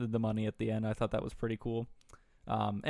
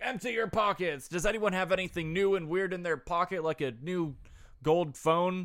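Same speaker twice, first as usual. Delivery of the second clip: high-pitched shouting; 8 semitones higher than usual. Speaker acting out a man yelling at everybody: retelling a yell. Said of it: "he's like yelling at everybody".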